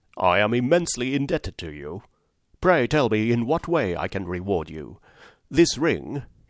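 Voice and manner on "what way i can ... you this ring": ordinary delivery, nothing marked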